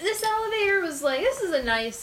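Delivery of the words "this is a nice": ordinary talk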